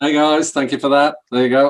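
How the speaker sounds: talking through leftover laughter. Thanking the hosts for the introduction, laughing while talking. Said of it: "I'm still laughing about".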